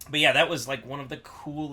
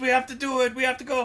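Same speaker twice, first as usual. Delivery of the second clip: put-on high, loud, drunk, pleading, insistent voice. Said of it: "Maxie was like".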